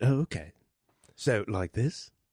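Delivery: put-on British accent, very slowly drawn out. Actor being directed on how to play a scene, trying a fake British accent. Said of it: "you're not a British man".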